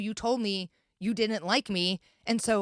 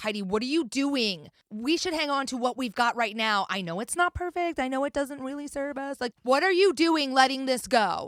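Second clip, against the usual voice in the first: put-on play-acted frightened, screaming, protesting child voice; 3 semitones higher than usual. Recounting how the speaker's 12-year-old inner child would scream: imitating a screaming inner child. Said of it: "would be screaming at me like".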